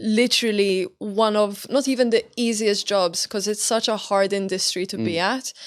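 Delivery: plain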